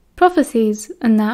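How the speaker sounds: plain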